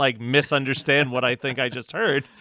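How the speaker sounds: normal talking voice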